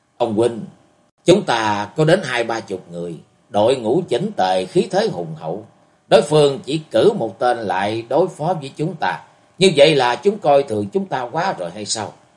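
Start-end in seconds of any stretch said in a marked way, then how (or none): none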